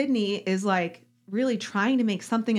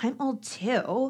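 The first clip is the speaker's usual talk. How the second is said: mock snide, snarky, condescending tone; 3 semitones higher, 3 dB quieter than usual. Retelling a quote from a reality show contestant: imitating a snarky tone. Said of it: "But she said it with this, like, snarky tone".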